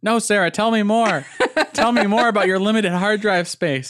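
very high, loud, egging-on cheering voice. Imitating Static cheering Sarah on to say more: imitating Static cheering her on. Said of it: "Static cheering at you on".

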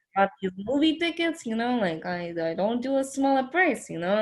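put-on Italian American accent. Imitating a ticket scalper from a movie, Italian American accent. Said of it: "the Italian American scalper was like".

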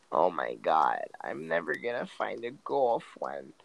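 put-on nasal voice. Giving advice to neckbeards, mocking how they sound: put-on nasal voice. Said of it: "Imagine having a nasally ass fucking voice".

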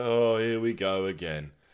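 drawn-out, slow, weary, worn-down resigned tone. Mocking how the other speaker sounded when saying the name: mocking a resigned tone. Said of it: "sound less resigned in your voice".

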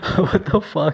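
words broken up by laughter. Reacting to a neighbor's deleted messages, laughing while talking. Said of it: "Sorry, I'm, I'm laughing".

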